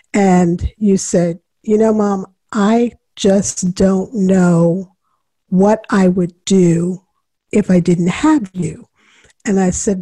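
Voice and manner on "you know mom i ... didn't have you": ordinary talk, nothing marked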